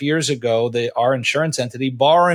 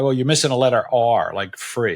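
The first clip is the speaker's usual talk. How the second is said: imitated sarcastic delivery; 3 semitones lower than usual. Retelling what a client asked about the fee: imitating a sarcastic client. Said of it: "I would get the sarcastic guy".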